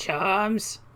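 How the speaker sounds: put-on very old woman voice, high. Voicing a stall keeper who greets the players: very old Shadow Kai woman voice. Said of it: "This is your Shadow Kai voice now?".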